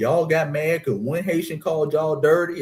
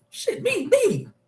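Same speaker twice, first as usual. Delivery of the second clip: acted, very high, eager, excited kid voice. Recalling the teacher asking who knows the answer in class: retelling his excited kid self. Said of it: "I used to be excited".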